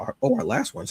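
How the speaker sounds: voice cracking up high.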